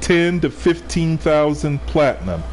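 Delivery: slow, deliberate, spaced-out, spelled-out repetition. Repeating a price for listeners a second time, said again slower. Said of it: "I'm going to say it again slower".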